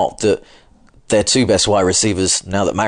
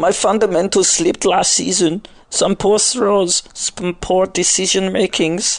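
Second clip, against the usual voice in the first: put-on ridiculous German accent, pitched higher; 11 semitones higher than usual. One speaker voices Brock Osweiler talking about his season, in a ridiculous German accent. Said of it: "Why have you done a ridiculous German accent?".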